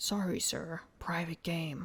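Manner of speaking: slow, bored, weary delivery. Voicing a guard turning someone away: bored sounding. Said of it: "All bored sounding".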